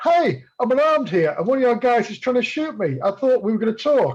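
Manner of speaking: high shouting. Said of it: "literally shouting through".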